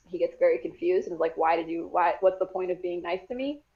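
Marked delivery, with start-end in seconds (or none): none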